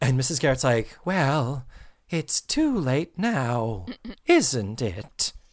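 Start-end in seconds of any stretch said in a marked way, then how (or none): 1.0-5.3 creepy, very slowly drawn out drawl. Retelling how Mrs. Garrett answered Joe's apology on Halloween, imitating Mrs. Garrett, creepy. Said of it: "Like, creepy".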